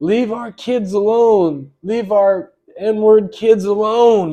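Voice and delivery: loud, very slow, stretched-out drawn-out scream. Retelling what a stranger at a store kept yelling: imitating someone screaming. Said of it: "he was screaming".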